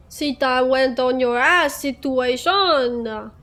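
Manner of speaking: put-on French accent. Repeating the line just said, now in a French accent. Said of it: "The French accent".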